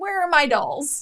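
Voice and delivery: put-on eerie, slow, creepy old crone voice. Imagining a creepy old lady with a cane coming over for dolls, creepy old lady voice. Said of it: "like this old like creepy lady".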